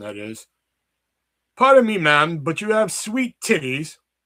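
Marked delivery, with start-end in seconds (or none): 1.6-4.0 bad English accent, high and loud. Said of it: "over in England".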